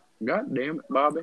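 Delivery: loud, high-pitched outburst. Urged to do the best impression they can, a Hank Hill impression. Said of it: "the best impression I can do is Hank Hill".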